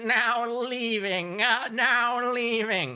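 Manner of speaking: very high, loud goat bleat, dragged slow. Voicing a goat door as a player pushes it: loud bleating announcement. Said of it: "you hear a loud bleating announcing".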